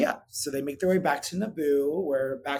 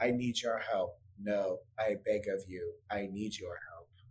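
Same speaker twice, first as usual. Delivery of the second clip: low, flat, emotionless monotone with no inflection; 6 semitones lower, 8 dB quieter than usual. Retelling a character's plea for help, in a flat emotionless Padme impression. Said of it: "give some emotion".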